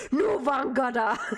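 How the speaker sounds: irate, angry, high-pitched delivery. Imitating a danish game hero's voice line: imitating an angry voice line. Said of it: "she says it in such an angry way".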